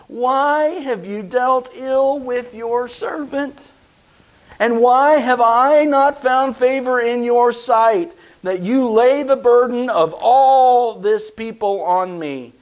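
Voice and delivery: whiny, complaining voice, "all" drawn out. Reading verse 11, where Moses speaks to the Lord: whiny Moses voice. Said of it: "Moses joins in a whiny voice".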